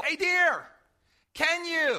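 high, drawn-out calling out. Retelling calling out to Lori at home: imitating own yell. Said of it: "And I'll yell".

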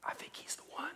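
very soft, hushed whisper. Picturing people lined up by a river, imitating them whispering. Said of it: "They're whispering to each other".

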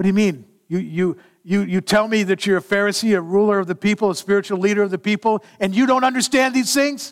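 indignant, angry tone. Acting out words spoken to a pharisee and teacher, acting out anger. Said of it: "with anger in there".

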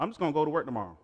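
lofty, self-assured tone. Showing how prideful talk sounds: imitating a haughty, prideful person. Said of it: "It sounds like this".

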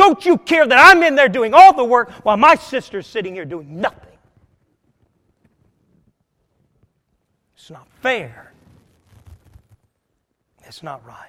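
put-on fed-up, put-upon exasperation. Retelling Martha confronting Jesus about her sister: exasperated Martha voice. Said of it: "just in exasperated state of mind".

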